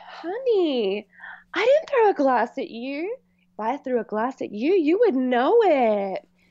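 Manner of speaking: sugary, small, sweet little voice. Retelling how a woman answered her accuser, in a sweet little voice. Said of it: "And that sweet little voice".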